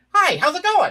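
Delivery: very high, loud, squeaky puppet voice. Demonstrating the voice now used for the character: Scooter-like New York voice. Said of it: "That's the voice I use for it now".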